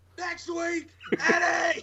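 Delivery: very high-pitched, loud yelled call. Answering as Eric Young when asked when he faces Eddie: imitating Eric Young yelling. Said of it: "when are you facing him, Eric?".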